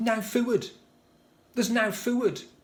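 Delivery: shrill, very high yelled shout. A parent recalls what their son used to shout as a teenager: imitating Daniel's shout. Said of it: "what our son Daniel used to shout".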